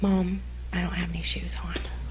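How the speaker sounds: quiet, soft, unvoiced whisper.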